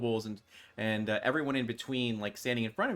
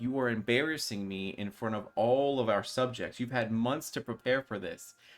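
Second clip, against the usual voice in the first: plain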